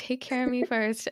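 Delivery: ordinary delivery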